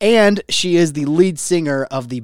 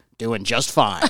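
put-on very deep, authoritative man's voice; 5 semitones lower, 3 dB quieter than usual. Retelling greeting a man who answered, the speaker imitates his very low authoritative voice. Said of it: "Very low and authoritative".

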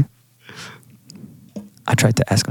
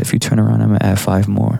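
ordinary delivery

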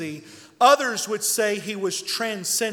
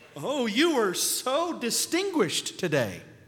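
mocking, sarcastic, swooping, sing-song delivery; 4 dB quieter than usual. Quoting a scripture character's remark to the king: imitating a sarcastic tone. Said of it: "Do you hear the sarcasm?".

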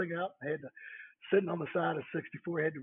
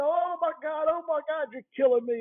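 mock screaming of a man, much higher; 12 semitones higher, 7 dB louder than usual. Retelling how a man screamed at him while he used a knife, imitating a man screaming. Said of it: "He's screaming at me".

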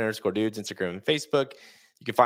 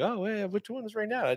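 much higher, sweet, mock innocent tone. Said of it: "And you're like".

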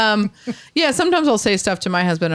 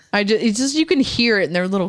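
normal talking voice

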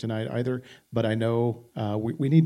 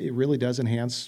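ordinary delivery

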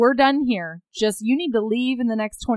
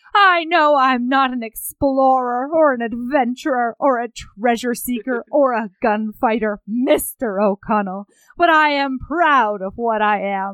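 put-on slow, drunk, huffy, proud-sounding voice. Recounting a scene where Evie speaks to a man, drunk, huffy Evie impression. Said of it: "she gets all drunk and huffy".

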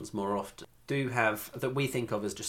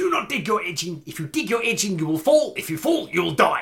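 furious, very loud South African shouting; 9 semitones higher, 11 dB louder than usual. Speaker recalls a man shouting from up above after the speaker fell, retelling angry South African shouting. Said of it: "shouted at in a South African accent".

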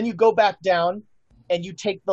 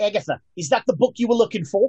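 put-on quick, Australian-accented speaking voice; 3 semitones higher than usual. Voicing a voice the players hear from nearby: Australian accent. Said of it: "Australian accent".

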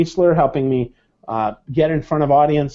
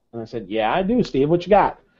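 ordinary talk

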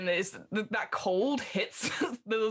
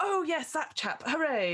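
celebratory, cheery cheering, pitched up; 6 semitones higher than usual. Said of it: "that sort of malarkey".

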